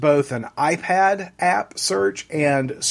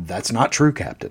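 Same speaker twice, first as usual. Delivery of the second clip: play-acted low, deep, menacing, foreboding ominous tone; 7 semitones lower than usual. Retelling a dream scene, one character answers the captain, mock-ominously. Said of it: "Data says very ominously".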